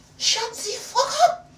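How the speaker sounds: very high, very loud, shrill put-on French woman voice. Retelling snapping back at a man over his dog, in a French woman accent. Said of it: "I had that accent down".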